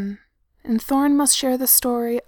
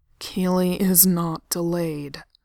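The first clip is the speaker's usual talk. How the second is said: through clenched teeth, grinding, lower; 5 semitones lower than usual. Narrator reads Thorne's line to the others; through clenched teeth. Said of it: "grinds out from between clenched teeth".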